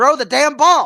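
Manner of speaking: very loud, high, fed-up, frustrated yell. Recalling watching a baseball clip, retelling a yell at the screen. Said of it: "I too was yelling at my screen like".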